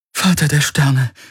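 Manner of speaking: high-pitched, gasping, panting, out-of-breath words. Narrator reads a woman's words as she checks she is still alive, panting. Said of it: "keuchte sie".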